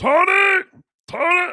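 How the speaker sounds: very high, slurred, tongue-tied voice. Imitating the downstairs neighbor calling Tony, Uncle Rick half-tongue voice. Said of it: "Like he had half a tongue".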